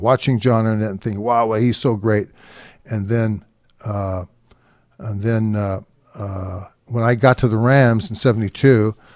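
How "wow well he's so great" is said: ordinary delivery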